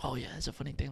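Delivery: breathy, very quiet whispered aside. Retelling how people quietly talk during a movie: imitating a whisper. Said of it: "it's one thing to whisper to your homie".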